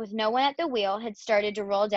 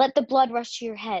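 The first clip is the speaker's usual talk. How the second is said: usual speaking voice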